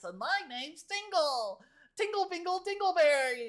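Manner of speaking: very high, loud put-on gnome voice. Showing off their wide vocal register, the speaker does a gnome voice. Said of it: "a voice like this".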